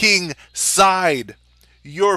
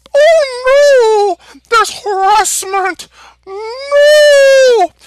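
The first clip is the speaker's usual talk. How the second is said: no said very high and stretched out; 7 dB louder than usual. Mocking people who now complain about harassment: Mickey Mouse voice. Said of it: "Why am I doing the Mickey Mouse voice?".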